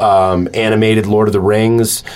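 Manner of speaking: normal talking voice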